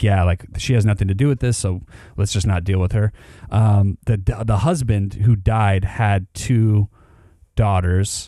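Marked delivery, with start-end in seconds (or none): none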